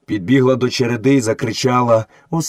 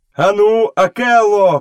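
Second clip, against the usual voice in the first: loud, high-pitched shout; 8 semitones higher, 3 dB louder than usual. Mowgli calls to Akela, shouting. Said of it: "крикнув Мауглі".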